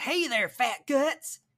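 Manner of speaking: very high pitch, slow, stretched-out drawn-out delivery. Imagining a game character talking, Hannah Montana voice. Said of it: "Stella just sounds like Hannah Montana".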